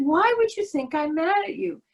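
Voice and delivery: play-acted high, half-curious, half-annoyed, mildly irritated tone. Retelling the speaker's reply to him, retelling half-curious, half-annoyed. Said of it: "half in interest and half in annoyance".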